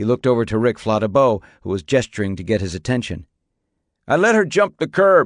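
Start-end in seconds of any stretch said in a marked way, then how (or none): 4.1-5.3 raised, loud, high shouting yell. Seeing someone gesture for his attention, a man calls out, yelling. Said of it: "he yelled".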